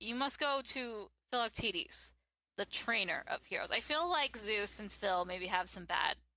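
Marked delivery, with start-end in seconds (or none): none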